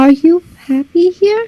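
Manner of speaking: very soft whisper. Asking the goose a question, whispering very softly. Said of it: "I'm just gonna whisper very softly".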